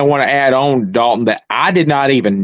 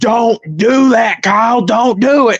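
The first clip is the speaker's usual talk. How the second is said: very high, slow, stretched, drawn-out scream; 10 semitones higher than usual. Retelling watching a race on TV, imitating own past screaming. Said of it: "I'm screaming".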